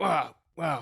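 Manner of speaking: annoyed spluttering.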